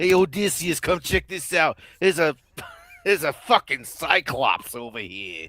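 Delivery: loud put-on Boston accent. Riffing on a scene with Odysseus and a cyclops, Boston accent. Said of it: "That's my Boston accent".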